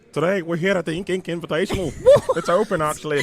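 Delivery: put-on accent that sounds Scottish. Introducing the Ink Invitational, the speaker slips into an accent that sounds Scottish. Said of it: "Why do you sound Scottish?".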